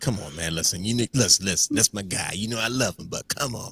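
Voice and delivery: mock amused, laughing-it-off, dismissive tone. Acting out the listener's reaction back to them, imitating someone laughing it off. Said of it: "and you're like".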